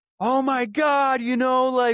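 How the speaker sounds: very high, shrill screaming outburst. Acting out a chaotic home scene: imitating someone screaming. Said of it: "Or I could be screaming".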